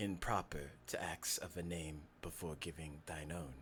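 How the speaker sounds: low, soft, creepy voice. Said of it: "You got the creepy voice".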